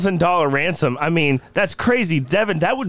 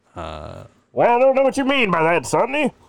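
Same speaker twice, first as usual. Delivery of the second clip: put-on swooping, old-time radio voice; 2 semitones higher than usual. Guessing aloud how D. B. Cooper talked: D. B. Cooper old-time radio voice. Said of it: "Do I sound like I'm on old-time radio?".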